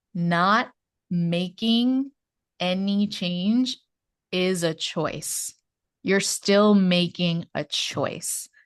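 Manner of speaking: very slow, deliberate, every word weighed. Speaker slowing down to make a point in conversation: very slow. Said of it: "I just want to say this really slow".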